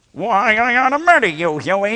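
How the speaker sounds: very high, exasperated, frustrated cartoon duck voice. A voice actor shows how he performs his cartoon character, Dad Duck voice. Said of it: "I think of the little paunch".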